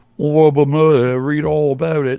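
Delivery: loud, high-pitched fake Cockney accent, badly done. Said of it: "I'll do my worst Cockney accent".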